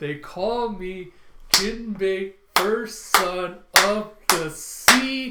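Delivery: grand, heroic, slow, loud booming voice.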